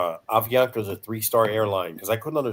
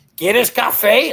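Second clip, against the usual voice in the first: mock aggressive tone, higher and louder; 13 semitones higher, 9 dB louder than usual. Retelling how coffee was offered on an airline: imitating someone asking aggressively. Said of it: "all aggressive".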